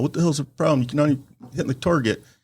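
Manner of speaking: mock angry cussing-out. Retelling how the range master scolded grandfather: imitating someone cussing. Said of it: "starts cussing him out".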